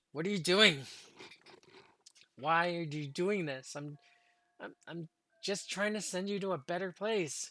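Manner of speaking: angry ghostly shriek. The narrator voices Letitia as she floats toward the player: Letitia's angry shriek. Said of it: "she kind of shrieks in an angry tone".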